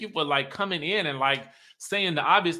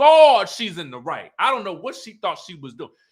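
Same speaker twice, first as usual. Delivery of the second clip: ordinary talk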